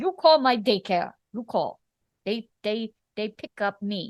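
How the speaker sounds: put-on thick, heavy Russian accent. Quoting a patient who hands over his daycare's card: thick Russian accent. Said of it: "the thick Russian accent".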